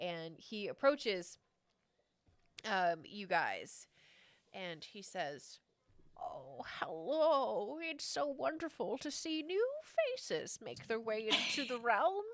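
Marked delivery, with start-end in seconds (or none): 6.2-12.2 put-on elderly old man voice. Narrating a game scene, voicing a man who approaches the players, in an old man voice. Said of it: "Is that an old man voice or an old horse voice?".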